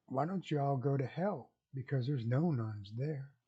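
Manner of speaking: very sweet, calm, gentle, unruffled voice. Telling a joke, voicing Mother Superior's reply to a man: retelling in a sweet, calm voice. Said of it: "in a very sweet and calm voice".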